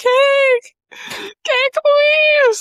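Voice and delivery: very high, loud scream, "cake" drawn out long. Speaker recalls running outside at her old apartment, retelling her own screaming.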